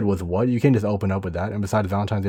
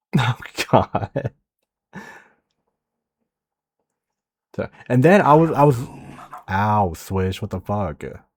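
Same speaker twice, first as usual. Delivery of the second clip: fake teary voice, on the verge of tears. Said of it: "You sound like you're at the verge of tears".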